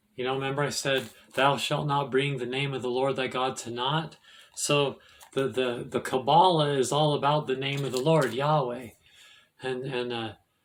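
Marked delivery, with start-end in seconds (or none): none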